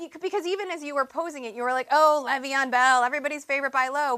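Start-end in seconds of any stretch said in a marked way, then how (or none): 1.9-4.2 faintly scornful, slightly derisive tone. Quoting the other speaker's earlier question back to them: imitating a derisive tone. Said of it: "saying it with a little derision in your voice".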